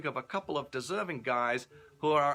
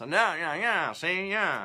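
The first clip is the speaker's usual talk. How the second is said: put-on 1930s New York voice, old-film style talk; 4 dB louder than usual. Introducing a story set in 1930s New York, in a 1930s New York Edward G. voice. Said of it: "where people talk like this".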